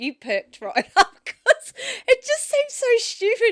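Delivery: high, loud laughing.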